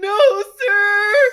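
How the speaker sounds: cried out very high, loud and anguished. Answering a pointed question about a GoFundMe campaign: Edward Elric anguished voice. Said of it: "in the Edward Elric "I Want My Brother Back" voice".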